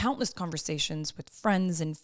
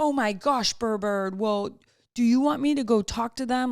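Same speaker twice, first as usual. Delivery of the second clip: acted child tough-guy voice, loud and high; 5 semitones higher, 5 dB louder than usual. Retelling what a kid says to his sibling, imitating Buddy acting tough. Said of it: "he gets real tough guy".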